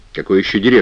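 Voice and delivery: ordinary talk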